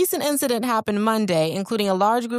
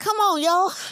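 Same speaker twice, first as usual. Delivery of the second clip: light, put-on Virginia accent, pitched up; 9 semitones higher than usual. Retelling what Stacy said in the store while eating with grandkids, imitating Stacy's Virginia accent. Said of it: "I'm going to do a little accent".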